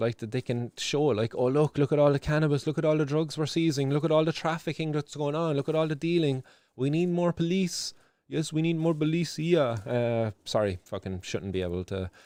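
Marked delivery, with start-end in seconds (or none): 1.3-9.8 terrible put-on French accent, pitched up. Mocking the police's boast about drug seizures: imitating police in terrible french accent.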